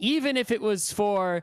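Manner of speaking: ordinary talk, nothing marked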